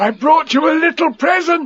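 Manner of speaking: eager, excited, very high-pitched voice. Reading a story aloud, Pooh offering Eeyore a present: excited. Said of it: "said Pooh excitedly".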